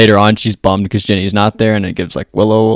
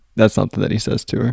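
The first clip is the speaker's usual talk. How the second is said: plain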